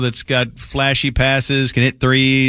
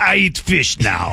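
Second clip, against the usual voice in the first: slow, put-on Russian supermodel accent; 2 semitones higher than usual. Joking about how a language sounds, imitating a supermodel in a russian accent. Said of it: "Russian accent".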